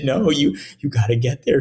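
mock tearful, pleading, crying tone. Retelling a call about a school shooting, the speaker imitates a woman crying. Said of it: "she's crying".

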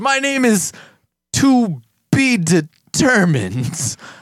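booming, high, slow drawn-out hero voice with swoops. Retelling a character's self-introduction in a show, All Might voice. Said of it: "All Might voice".

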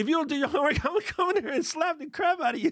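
very high, shrill, giggling yell. Imitating a friend who laughs while yelling at her kids: imitating someone laughing while yelling. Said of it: "she laughs while she yell at her kids".

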